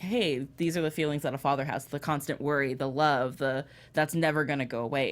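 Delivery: ordinary talk, nothing marked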